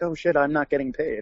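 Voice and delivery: ordinary delivery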